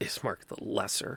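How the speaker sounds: chuckling whispered mutter under the breath. Voicing a person in Bohemian dress, about Ismark: chuckling under their breath. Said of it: "kind of chuckle under their breath".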